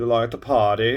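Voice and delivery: hammy, overdone, bad fake German accent. Voicing a painted miniature who greets the viewer: bad German accent. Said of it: "that's a bad German accent".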